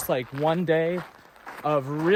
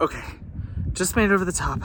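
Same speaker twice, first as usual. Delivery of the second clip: panting, winded, short of breath; 2 semitones higher than usual. A hiker who just reached the top of a climb talks to viewers; out of breath. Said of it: "I know I sound out of breath".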